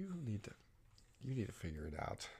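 soft, whispered, scolding tone. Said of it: "I was like".

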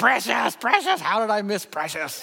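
high-pitched scolding tone. Retelling self-reproach after missing a spelling bee word, in a Gollum voice. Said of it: "Just like Gollum in the Lord of the Rings".

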